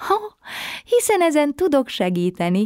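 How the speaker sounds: sudden high, bright exclamation. Answering a sad little girl who cannot fall asleep, exclaiming. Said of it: "kiáltott fel Manó".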